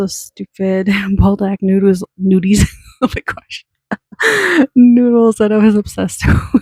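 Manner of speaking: giggling through the words, slowing down. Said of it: "I just need to take a little breather here".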